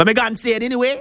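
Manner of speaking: terrible fake Jamaican accent. Retelling people coming to see a man raised from the dead, bad Jamaican accent. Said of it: "That was a terrible accent".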